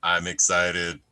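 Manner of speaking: put-on dead flat, expressionless, low monotone. Retelling how Andres answered when the moderator asked him, flat monotone. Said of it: "but it was just so monotone".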